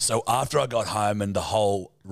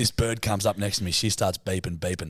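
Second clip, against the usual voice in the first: normal talking voice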